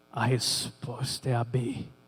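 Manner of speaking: very low, drawn-out, grave, thunderous deep whisper. Retelling a mysterious voice during an exam: thunderous deep voice, whispering. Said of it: "uma voz de trovão, uma voz grave, mas sussurrando".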